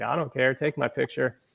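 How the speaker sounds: ordinary talk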